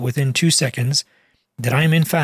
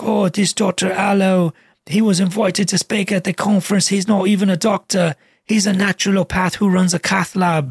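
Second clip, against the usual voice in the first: put-on British accent, pitched up; 5 semitones higher than usual. Quoting a man in a YouTube video who insults the speaker: British accent. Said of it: "he has a British accent. He's like".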